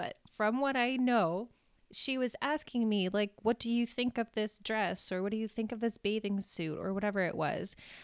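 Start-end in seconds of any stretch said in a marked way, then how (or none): none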